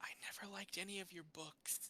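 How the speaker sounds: hushed, very soft whisper right at the ear. Narrating a character leaning in to speak into the listener's ear, in a whisper. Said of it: "she whispers in your ear".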